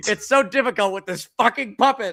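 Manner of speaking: loud, high, exasperated grumbling outburst. Retelling a behind-the-scenes video: imitating Billy Dee Williams losing it. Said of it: "he's losing his mind on set".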